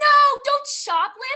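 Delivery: very high, loud, worried, squealed out. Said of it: "got all worried and she was like".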